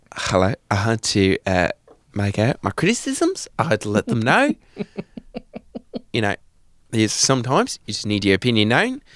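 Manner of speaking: put-on New Zealand accent, critical tone. Someone delivering their first criticism, in a new zealand accent. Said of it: "you become from New Zealand".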